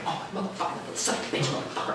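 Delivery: soft, whispered, muttered cursing. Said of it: "He's sitting there muttering".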